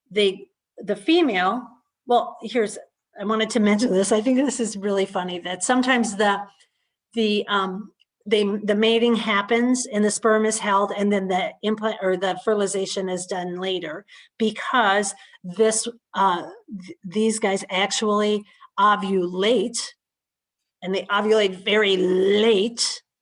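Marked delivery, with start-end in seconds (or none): 20.8-23.0 the word LATE strongly stressed. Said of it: "I emphasize the word part late".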